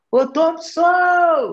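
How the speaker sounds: high, put-on calling-out shout. Retelling how the mother called the cousin from inside: imitating a shout. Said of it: "minha mãe gritou lá de dentro".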